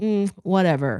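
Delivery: snooty, uppity, dismissive can't-be-bothered tone. Imitating a rich neighbor brushing people off: imitating an uppity dismissal. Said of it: "so uppity about it".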